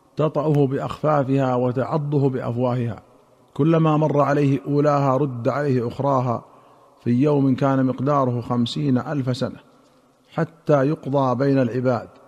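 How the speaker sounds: ordinary talk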